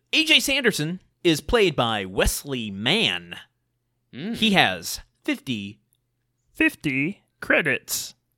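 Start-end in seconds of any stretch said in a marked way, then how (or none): 4.3-8.1 cartoonish puppet voice, pitch swooping up and down. Telling the other speaker about an actor's screen credits, in a Muppet voice. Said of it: "That was my Muppet voice".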